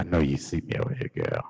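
very low, creepy come-on voice. Performing a peeking-around-the-corner bit on the show, in a creepy voice. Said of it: "With that creepy ass voice that you be doing".

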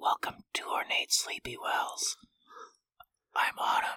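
ASMR-style delivery. Host greets everyone at the start of an ASMR episode: ASMR voice. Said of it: "we're doing ASMR".

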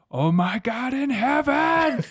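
acted-out, very slow scream climbing very high. Retelling a horror episode, imitating a scream. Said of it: "he just screams".

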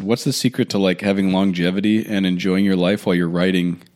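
ordinary talk

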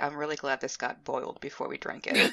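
very quiet, hushed, discreet murmur. A character looking into their tea, saying this very quietly. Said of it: "say very quietly".

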